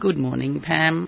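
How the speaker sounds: croaky, hoarse voice. Greeting the other speaker at the start of a radio show: croaky voice. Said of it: "You with the croaky voice".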